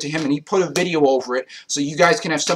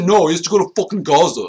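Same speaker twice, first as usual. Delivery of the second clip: mocking, put-on stupid-sounding voice; 2 semitones higher, 4 dB louder than usual. Speaker quotes what Tice kept saying: imitating Tice's stupid voice. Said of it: "He said in that stupid voice".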